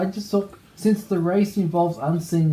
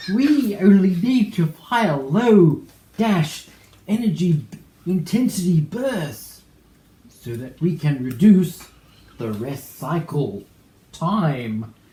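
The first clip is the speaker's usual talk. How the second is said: put-on halting actor voice, louder; 4 dB louder than usual. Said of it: "it's a perfect imitation of William Shatner".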